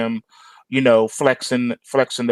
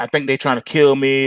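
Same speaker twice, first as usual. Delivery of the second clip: ordinary talk, nothing marked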